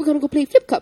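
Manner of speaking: put-on high, loud, Timmins-style Canadian accent. Retelling what firefighters from Timmins said after a tour, in a Canadian accent impression. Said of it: "Your Canadian impression".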